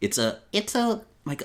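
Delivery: put-on very high, slightly raspy woman's little boy voice. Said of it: "the stock female little boy voice".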